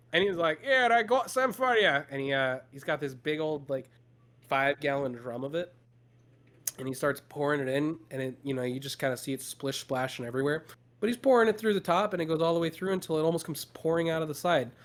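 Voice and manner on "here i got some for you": effortful put-on Scottish accent, high and slow. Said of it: "doing a Scottish accent".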